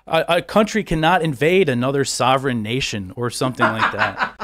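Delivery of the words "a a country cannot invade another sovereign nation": ordinary talk, nothing marked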